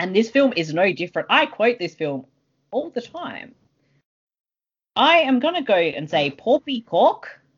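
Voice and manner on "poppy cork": put-on mixed Australian and South African accent. Quoting a favourite film line: weird South African-Australian accent. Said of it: "In a weird South African".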